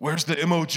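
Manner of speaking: mild, announcing call. Retelling a deacon walking through the room calling out, booming voice. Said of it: "he says in a booming voice".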